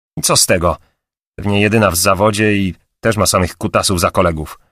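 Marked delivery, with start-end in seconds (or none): none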